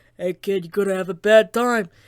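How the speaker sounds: speaking through a stuffed-up nose. Showing a questioner the Sans voice he can do: Sans voice. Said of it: "the best I can do is".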